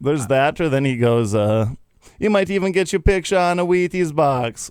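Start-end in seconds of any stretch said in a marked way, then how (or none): 2.2-4.7 put-on Jamaican accent, pitched high. Quoting a favorite line from a movie, Jamaican accent from Cool Runnings. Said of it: "one of the only accents I can do".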